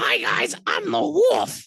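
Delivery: very high, slow, creaky, rough wolf voice. Describing dressing up as a wolf for kids' videos, showing the wolf character voice. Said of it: "used a voice like this".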